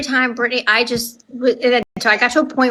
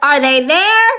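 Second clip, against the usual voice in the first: acted yell, louder; 3 semitones higher, 5 dB louder than usual. Retelling a phone call where she thinks someone broke in: retelling yelling at her. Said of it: "I'm like yelling at her".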